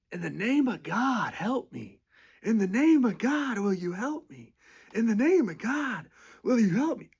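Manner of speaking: mock shrill screaming, very high and loud. Retelling how an old man begged for help: imitating someone screaming. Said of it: "He's just screaming like that".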